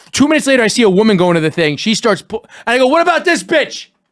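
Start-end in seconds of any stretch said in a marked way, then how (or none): 2.8-3.8 shrill, high, full-lunged shout at the top of lungs. Retelling shouting at a wedding when a woman goes for food, top-of-lungs shout. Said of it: "At the top of my lungs".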